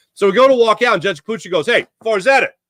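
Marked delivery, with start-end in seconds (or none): 1.7-2.5 yelling, pitched higher. Retelling how a judge called out to his dad: imitating a judge yelling. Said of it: "He yells at my dad".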